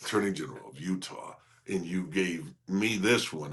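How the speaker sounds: very deep, breathy, near-whispered delivery. Retelling announcing his title at the counter, in a very deep voice. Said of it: "I say it in a very deep voice".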